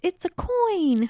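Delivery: terrible mock Irish accent, high, slow and delighted.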